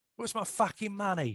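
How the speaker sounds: menacing British gangster voice, every word threatening. Discussing an actor who gets gangster roles, imitate him in a british gangster voice, like a death threat. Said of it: "one of the great British gangster voices".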